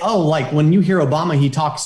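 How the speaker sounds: normal talking voice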